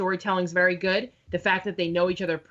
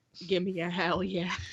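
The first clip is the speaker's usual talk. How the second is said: put-on creepy wrestler voice, quieter; 5 dB quieter than usual. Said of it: "That was like Bray Wyatt".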